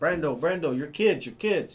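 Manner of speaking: put-on urgent tone, Italian accent. Speaker retells what his father-in-law said to him, in an Italian accent. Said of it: "in his Italian accent".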